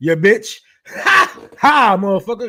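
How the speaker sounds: very loud, high talk with laughing between words. Reacting to a played clip, laughing while talking. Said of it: "Let me get the rest of my laughs out".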